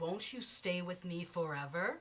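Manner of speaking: disembodied, bodiless voice from nowhere. Narrator voices an unseen presence as the house shakes: disembodied voice. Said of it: "a disembodied voice says".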